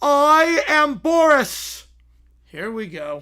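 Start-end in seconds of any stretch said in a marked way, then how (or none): 0.0-1.9 very loud, booming, thundering, pitched-up voice. A voice echoes across the battlefield in the story, booming Boris voice. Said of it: "a booming voice echoes across the battlefield".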